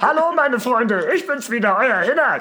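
very high, loud little frog puppet voice. Speaker who says they sound like Kermit the Frog greets friends: Kermit the Frog voice. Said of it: "ich klinge wie Kermit der Frosch".

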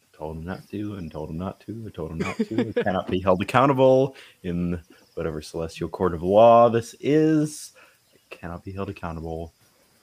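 repetitive muttering, talking to oneself. Voicing a character muttering while another character prays: muttering under breath. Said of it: "I mutter under my breath as he's doing this".

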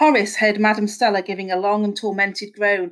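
ordinary delivery, nothing marked

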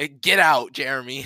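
ordinary talk

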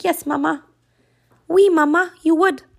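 high-pitched little dog voice. Answering her own question as the pet dog: voicing her dog Simone. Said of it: "She's like".

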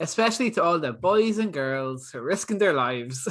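motherly Irish mammy lilt and manner. Reading a quoted tweet aloud: irish mammy voice. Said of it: "I read it like a, an Irish mammy".

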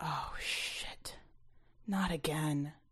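very slow, hushed, barely voiced whisper. Esteban hears his mother scream, goes very still, then whispers. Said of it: "then whispered".

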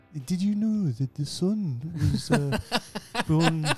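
slow, slightly northern put-on voice. Asked to remember how he sounds: Brian Cox impression. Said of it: "that's a very good im-, impression".

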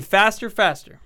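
normal talking voice

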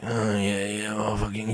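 rough, raspy, smoky rasp in the voice. Imitating how the guy in Californication talked: raspy voice imitating the Californication lead. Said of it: "He had this raspy motherfucking voice".

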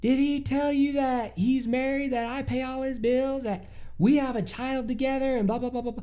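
high, bad Southern accent. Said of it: "This accent is killing me".

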